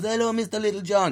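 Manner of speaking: put-on high-pitched Turkish accent. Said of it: "I shouldn't do an accent".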